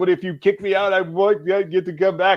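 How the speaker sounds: put-on tearful, snotty, high sobbing voice. Retelling pleading with the man making the final decision: retelling a tearful plea. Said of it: "I'm like crying, snot bubbles".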